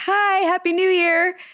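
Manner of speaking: high, slow, syrupy, overly sweet voice. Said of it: "I'm like".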